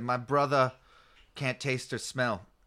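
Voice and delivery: put-on British accent on a single word. Quoting a friend's british brother, british accent on one word. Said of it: "why he said one word in an accent".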